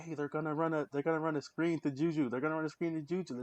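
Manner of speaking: acted screaming, high pitch, repeated yell. Retelling watching the Steelers game: imitating own screaming at the TV. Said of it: "I was screaming at the T V".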